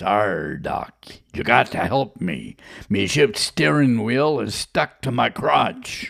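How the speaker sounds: put-on rough, creaky pirate accent. Radio host telling the inappropriate joke of the day, in a pirate voice. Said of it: "a pirate walks into a doctor's office and says".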